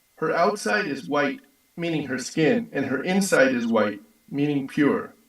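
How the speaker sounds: usual speaking voice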